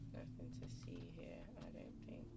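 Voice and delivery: low, soft unvoiced whisper.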